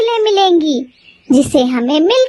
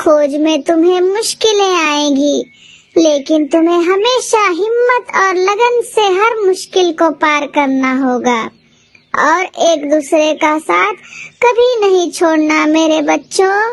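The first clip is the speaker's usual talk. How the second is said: put-on elderly grandmother voice, old granny. Narrating a story, the grandmother gives the children parting advice: old grandmother voice. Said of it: "फिर वह दोनों बूढ़ी दादी के यहाँ जाती है। / मैं तुम्हें एक प्राचीन खजाने के राज के बारे में बताने जा रही हूँ, / फिर वह दोनों बूढ़ी दादी के यहाँ जाती है।".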